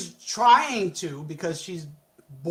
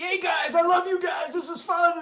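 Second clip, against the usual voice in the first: shrill, very high screaming cheer; 11 semitones higher than usual. Recapping a show episode, acting out a character's line, imitating someone screaming. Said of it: "he's screaming".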